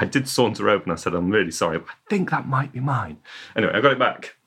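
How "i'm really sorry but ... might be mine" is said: put-on ever-so-polite, apologetic manner with British accent. Retelling approaching someone to reclaim a lost pump: retelling a very British polite apology. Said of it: "In the most British way possible".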